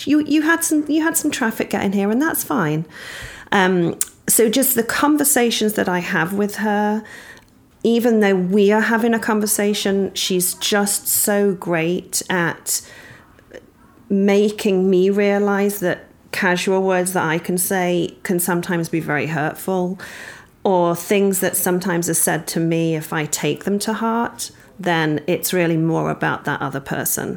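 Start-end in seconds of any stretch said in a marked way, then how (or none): 0.0-2.9 high-pitched, matter-of-fact, setting-straight tone. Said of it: "And she said".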